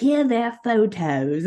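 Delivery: mock bad Australian accent. Retelling a police inspector showing photos: imitating a bad Australian accent. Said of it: "this guy has a really bad Australian accent".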